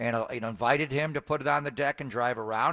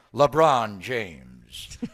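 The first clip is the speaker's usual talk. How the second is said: put-on arena PA announcer voice, lower and louder; 4 semitones lower, 6 dB louder than usual. Imitating an arena announcer calling a player's name: Lawrence Tanter PA voice. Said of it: "it sounded like Lawrence Tanter, the great voice of the Lakers for years, P A voice".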